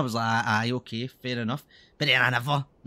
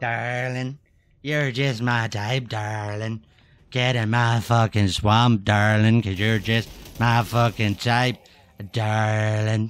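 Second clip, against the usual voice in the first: slow, drawn-out put-on Irish accent; 3 semitones lower, 4 dB louder than usual. Repeating a phrase over and over, in a mock irish accent. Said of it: "That's how I would say it if I was Irish".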